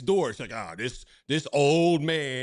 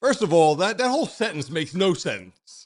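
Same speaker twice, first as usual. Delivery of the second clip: ordinary talk, nothing marked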